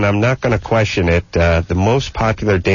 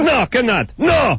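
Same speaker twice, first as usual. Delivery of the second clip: put-on Middle Eastern accent, much higher. Imitating someone who runs a Middle Eastern place, Middle Eastern accent impression. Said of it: "That's my impression of everyone who runs a Middle Eastern place".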